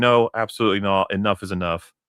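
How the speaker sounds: normal talking voice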